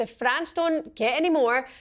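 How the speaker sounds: ordinary delivery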